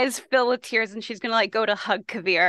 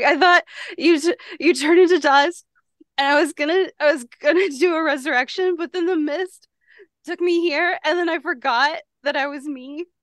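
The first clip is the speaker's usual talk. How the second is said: tearful speech hiccuping through tears, much higher; 7 semitones higher, 3 dB louder than usual. Playing a woman hugging someone she thought dead, crying while talking. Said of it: "She is trying to talk as she's crying".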